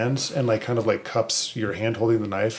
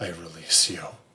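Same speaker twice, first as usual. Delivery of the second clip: soft, low, hushed half-whisper; 5 semitones lower, 4 dB quieter than usual. Player describing her character's final act at a cliff edge, half-whispering. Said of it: "she just whispers".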